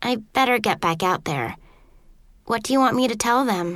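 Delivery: ordinary delivery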